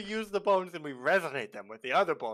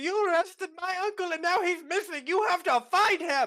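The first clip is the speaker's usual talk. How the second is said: very high, shrill, high-pitched yelling; 13 semitones higher, 5 dB louder than usual. Playing a character at the magistrate's door, yelling. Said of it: "I'm gonna yell".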